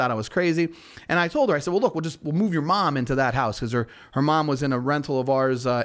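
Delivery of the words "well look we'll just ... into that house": ordinary talk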